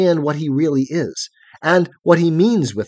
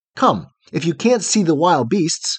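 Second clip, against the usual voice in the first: plain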